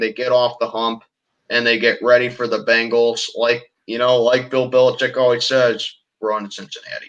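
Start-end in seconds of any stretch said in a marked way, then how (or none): 6.2-7.1 breathy, half-whispered put-on voice. Quoting what Bill Belichick always says, in a Bill Belichick impression. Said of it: "that's my best impression of him".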